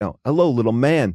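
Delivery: badly done, terrible, rough, clumsy put-on actor voice. Retelling meeting an actor who knelt to talk: terrible impression of an actor. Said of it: "forgive this terrible impression".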